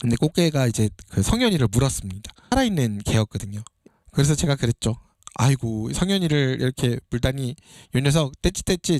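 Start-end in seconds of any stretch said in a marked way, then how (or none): none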